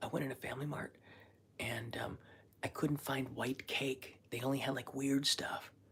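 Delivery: hushed whisper. Talking quietly while someone sleeps nearby, the speaker is whispering. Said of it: "I'm whispering because Kanai's asleep".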